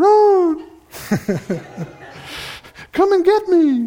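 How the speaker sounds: tiny, very high, coaxing sing-song voice. Retelling a voice calling from a drawer, little voice. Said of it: "I heard this little voice".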